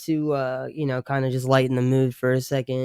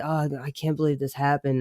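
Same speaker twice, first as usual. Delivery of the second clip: mocking put-on dismay, acting like a victim. Mocking a man who talks as if something happened to him: imitating someone acting like a victim. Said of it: "saying it like there was, like, a car accident".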